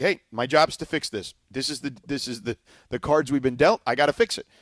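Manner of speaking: normal talking voice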